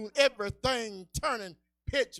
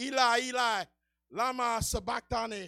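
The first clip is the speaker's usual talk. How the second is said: ordinary talk, nothing marked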